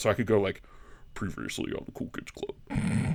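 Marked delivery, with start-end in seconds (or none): 1.1-3.2 extra-deep, slow, breathy TV narrator voice. Showing how to open the show, in a deep Lost recap voice. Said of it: "I can go deeper than than even normal".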